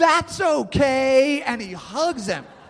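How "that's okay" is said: mock yell at top of lungs, "okay" drawn out. Describing Lincoln hugging Jameson, the speaker retells his line: retelling Lincoln's yell. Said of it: "at the top of his voice".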